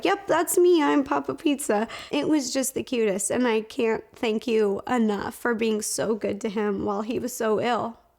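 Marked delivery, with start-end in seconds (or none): 0.0-1.9 put-on delighted, eager, excited, pitched-up proud tone. Retelling how dad answered fans who recognized him: imitating dad's excited reply. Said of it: "he'd get so excited".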